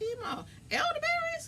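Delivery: very high, surprised, curious voice.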